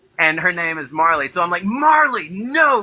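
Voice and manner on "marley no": play-acted angry scolding yell, pitched high. Telling a story, the speaker reenacts yelling at his niece: retelling an angry shout. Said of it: "I immediately go into fucking angry".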